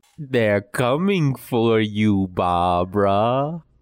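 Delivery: teasing taunt with the name drawn out. Doing an impression of Johnny when asked: Johnny impression. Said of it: "go ahead and give me your impression".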